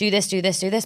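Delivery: ordinary talk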